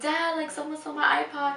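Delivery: put-on crying voice. Retelling a phone call with their dad, imitating their past self crying. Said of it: "I came into my room and I was crying".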